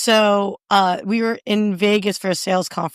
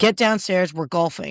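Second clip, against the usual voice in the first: normal talking voice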